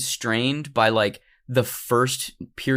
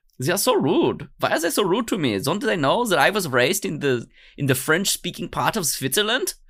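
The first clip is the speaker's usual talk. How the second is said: put-on German accent, pitched higher; 6 semitones higher than usual. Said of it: "I don't know why he has a German accent".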